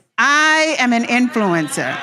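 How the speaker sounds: sounding like you believe it. Leading a group in an affirmation, showing how to say it with conviction. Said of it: "say it like you believe it".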